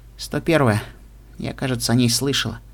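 ordinary delivery

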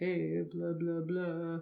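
deep, pushed-down put-on dude voice. Speaker describes kinds of male voices and demonstrates one: put-on deep voice. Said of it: "Is that your deep voice impression? Yes".

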